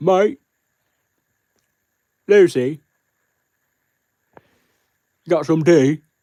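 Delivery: put-on British accent, high and very slowly drawn out. Trying a British impression on request for the first time, British accent impression. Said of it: "Do a British impression".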